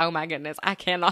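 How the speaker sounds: plain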